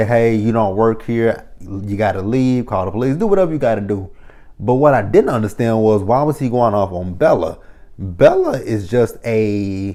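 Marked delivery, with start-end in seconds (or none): none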